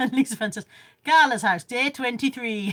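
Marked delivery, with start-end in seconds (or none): 1.0-2.7 loud, slow, bad put-on Geordie accent. Reading out a message someone sent in: dodgy Geordie accent. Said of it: "Probably not as dodgy as I just said it in".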